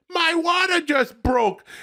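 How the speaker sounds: high, slow, wailing cry. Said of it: "And she said".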